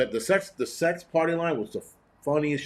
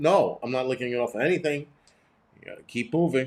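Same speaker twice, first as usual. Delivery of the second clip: ordinary talk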